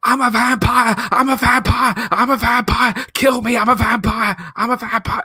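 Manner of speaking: very high yelling, repeated over and over. Retelling a film scene where a character runs around the city: imitating Nicolas Cage shouting. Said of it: "he runs around the city just shouting".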